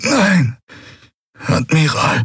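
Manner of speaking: groaning through the hurt. A wounded officer answers the admiral asking if he is all right, groaning in pain. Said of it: "ächzte Quailor".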